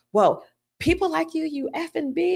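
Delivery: high, angry woman's voice. Retelling what a protester said to them: imitating an angry woman. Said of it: "she was so mad at me".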